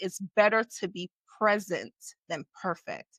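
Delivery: plain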